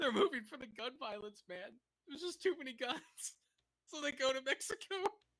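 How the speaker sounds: talking through laughter. Reacting to a news clip on Americans moving to Mexico, laughing while talking. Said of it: "I'm sorry for laughing".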